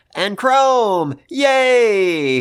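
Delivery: high, loud, excited, delighted cheer.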